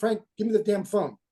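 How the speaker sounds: ordinary delivery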